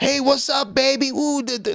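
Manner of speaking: high, patronising, condescending tone. Imitating men on the Strip talking to women: imitating men talking down. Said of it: "they talk like this".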